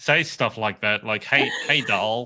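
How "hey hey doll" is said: accent of the southern American states. Showing how people in the southern states would say a word, in a southern accent. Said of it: "in a in a southern accent".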